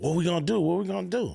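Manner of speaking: mock panicky, frantic voice. Retelling how a friend reacted to a letter from the FBI: imitating someone panicking.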